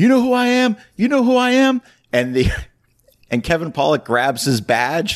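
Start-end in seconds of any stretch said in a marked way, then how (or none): 0.0-1.8 very high, shrill, loud yelling. Retelling a movie scene where robbed cops yell at masked robbers: retelling a yell. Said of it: "the cops start yelling".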